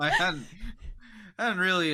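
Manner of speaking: high, loud laughter while speaking.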